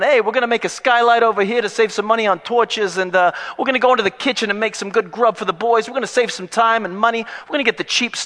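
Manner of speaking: put-on loud, high, belted-out Brooklyn accent. In a comic makeover-show spoof, Joseph answers the host from prison, Brooklyn accent. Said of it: "I can't get away from the Brooklyn accent".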